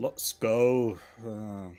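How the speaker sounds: feeble, very weak, half-hearted, limp shout. Using a move in the game, saying the line very weak. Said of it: "but say it very weak".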